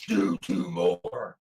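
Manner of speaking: very low, deep, short menacing growl. Retelling what a voice growled over you at the gym, growling Jesse Ventura voice. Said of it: "this voice growls".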